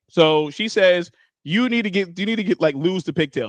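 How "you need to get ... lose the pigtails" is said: put-on harsh, cutting tone. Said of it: "She said it pretty harshly".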